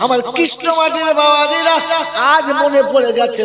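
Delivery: high, loud, fervent preaching call.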